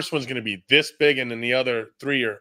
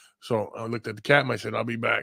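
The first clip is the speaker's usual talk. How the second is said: ordinary talk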